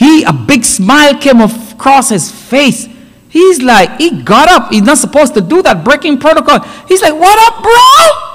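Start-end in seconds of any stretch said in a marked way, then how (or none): 7.1-8.4 thrilled, acted out, very high excited voice. Retelling a defendant greeting his brother the judge: imitating happy excitement. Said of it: "He got all happy and excited".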